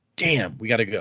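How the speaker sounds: plain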